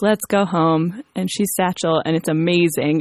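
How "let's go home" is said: put-on very flat, level, monotone American accent. Retelling a movie scene where she boards an airplane: very flat American accent. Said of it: "in her very flat American accent goes".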